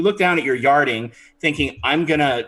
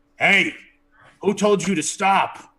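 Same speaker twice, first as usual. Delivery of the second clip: put-on character voice, pitched up; 5 semitones higher than usual. Voicing a lobster in a chef hat behind the bar: lobster chef character voice. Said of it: "a voice comes from behind the bar and it says".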